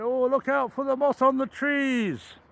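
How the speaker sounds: put-on high Geordie accent. Retelling what companion Dave used to say when asked where he was going: imitating Dave's Geordie accent. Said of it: "he used to say it in a Geordie accent".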